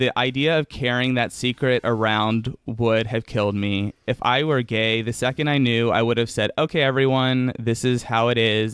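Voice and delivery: ordinary talk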